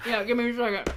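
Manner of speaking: speaking through full mouth. Asking the others to wait while eating pretzels: talking with mouth full. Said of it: "I have pretzels in my actual mouth".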